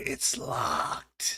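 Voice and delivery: loud stage whisper meant to carry. Voicing a knight sneaking up to a locked door: loud whisper. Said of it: "he whispers loudly".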